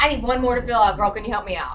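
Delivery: ordinary delivery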